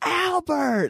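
acted out shrill yell, pitched way up. Retelling everyone yelling at a cousin during a Mario Kart game, imitating people yelling a name. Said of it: "everyone starts yelling it out".

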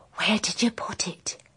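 hushed, breathy whisper under the breath. Recounting an overheard conversation, quoting a man's question, retelling a very quiet line. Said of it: "And then he says very quietly".

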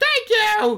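very high, squeaky, loud cartoon voice. Friends compare game characters, speaker demonstrates: Toad voice. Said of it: "where you do the Toad voice".

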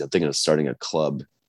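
ordinary delivery

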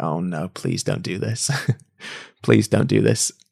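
reluctant groaning tone. Recalling their girlfriend bringing up going vegan, speaker reenacts their own groaning plea. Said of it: "I was just like groaning".

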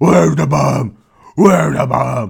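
rough voice like gargled dirt, super gravelly, loud. Speaker retells a fight where Batman demands an answer, super gravelly Batman voice. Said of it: "his voice gets super gravelly, like he just, like, gargled, like, dirt".

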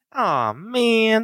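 "man" pitched very high and drawn out. Doing the one impression they can do, a Swiper voice. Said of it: "one impression I can do, it's Swiper".

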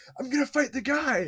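very high, pumped, hyped-up yell. Retelling a movie scene where a fighter accepts a challenge, retelling a hyped yell. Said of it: "he just yells like".

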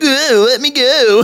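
very high, squeaky cartoon voice. Speaker retelling a scene where Titus is grabbed by a pirate, Sonic voice. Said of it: "Titus in his sonic voice is like".

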